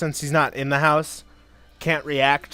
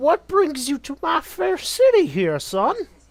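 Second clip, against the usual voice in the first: put-on very high, swooping elderly man character voice; 11 semitones higher than usual. Running a game, the speaker voices an old man greeting the player's character, in old man voice. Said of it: "Says the old man".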